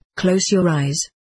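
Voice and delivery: plain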